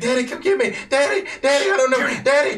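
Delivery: very high, very loud, shrill, frantic panicked screams. Voicing a character panicking on comms, calling for her father: Thumper Jr. panicked screaming. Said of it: "screams echoing in your ear because she is still absolutely panicking".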